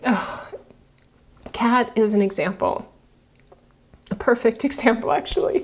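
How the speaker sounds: tearful, teary voice. Talking about someone's cancer treatment as an example: tearful. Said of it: "I'm all teary".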